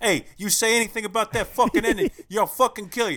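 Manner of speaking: fake Italian accent with Sicilian flavour. One of a trio letting his Italian side come out again: put-on Italian accent. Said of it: "The Italian comes out again".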